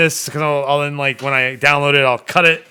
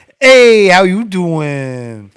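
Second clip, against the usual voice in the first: loud, very slow drawl, stretched-out "doing"; 4 semitones higher, 5 dB louder than usual. Imitating a sitcom character's catchphrase: Joey Tribbiani voice. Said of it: "It's gonna be Joey Tribbiani from Friends".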